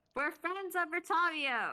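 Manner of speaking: slow, high, drawn-out carrying yell. Calling out in character to a creature that is running away: yelling. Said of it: "I'm gonna yell".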